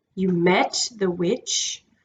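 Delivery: low, quiet voice with a growl underneath. Hearing Diggory mention the witch, Aslan answers in a low voice with a growl. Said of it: "in a low voice which had a thread of growl in it".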